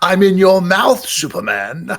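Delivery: very high, loud, swooping cartoon-villain voice. Pitching Starro voiced as Skeletor, wrapped around Superman's face; Skeletor voice. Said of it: "you need to do Starro as Skeletor".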